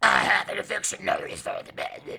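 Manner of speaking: exaggerated raspy growl. Correcting a retold movie line in an overdone Nick Nolte voice. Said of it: "I went too Nick Nolte on that one".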